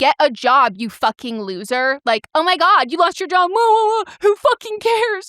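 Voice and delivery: put-on top-of-lungs yell, high-pitched and rising. Retelling how a man answered a woman's DMs: imitating top-of-lungs yelling. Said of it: "yelled essentially at the top of his lungs".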